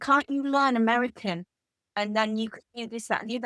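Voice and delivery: ordinary talk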